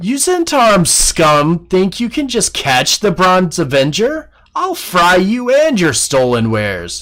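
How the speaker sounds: high, swooping, jeering taunting dragon voice. Voicing a dragon that taunts the landing party: taunting dragon voice. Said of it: "you hear the dragon begin to speak to them and says".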